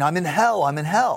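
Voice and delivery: play-acted, high-pitched screaming, repeated. Retelling a patient revived during compression, imitating him screaming. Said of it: "he comes back and he's screaming".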